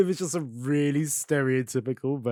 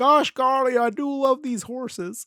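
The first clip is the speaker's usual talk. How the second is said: very high-pitched, put-on Texas accent; 10 semitones higher than usual. Riffing on a horse-betting character in a remade series: John Smith Texas accent. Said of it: "He's giving him like a Texas accent as well".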